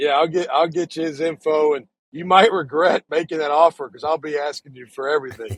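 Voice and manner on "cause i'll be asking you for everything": usual speaking voice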